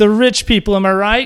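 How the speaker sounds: sarcastic.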